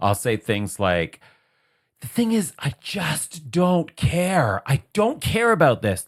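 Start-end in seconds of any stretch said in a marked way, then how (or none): 2.0-6.1 rip-roaring, worked-up rant, very high pitched. Retelling own words while venting after work: imitating own ranting. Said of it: "rant mode".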